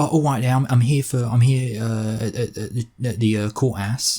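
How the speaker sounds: stumbling put-on Essex accent in a woman's voice. Describing a woman arriving at court, the speaker acts out her words: put-on accent, woman's voice. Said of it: "She talks in this kind of accent".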